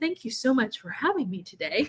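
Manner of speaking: polished, put-on podcast-style voice. Thanking the host for having them, in a put-on podcast guest voice. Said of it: "let me try to do my podcast guest voice".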